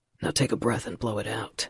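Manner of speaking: low, gruff delivery. Reading a romance scene aloud, a man holding a lit match: gruff. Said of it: "he says gruffly".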